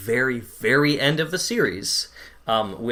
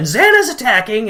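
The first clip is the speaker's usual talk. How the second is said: very loud, high, alarmed shout at the top of the lungs; 8 semitones higher, 9 dB louder than usual. Retelling how a character wakes the others: imitating someone shouting loudly. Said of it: "He's just shouting as loud as he can".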